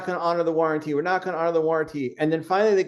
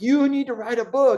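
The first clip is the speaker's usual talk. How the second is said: acted-out yelling with the voice pitched up; 8 semitones higher than usual. Speaker retells an audience member demanding a book, retelling a yell. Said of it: "And he started yelling at me".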